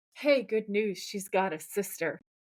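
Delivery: confiding stage half-whisper. Retelling a TV scene where one brother tells the other: imitating a character half-whispering. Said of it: "he whispers to Sam".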